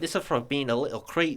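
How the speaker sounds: put-on Scottish accent. Showing the Scottish accent learned from a movie: Scottish accent. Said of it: "the Scottish accent".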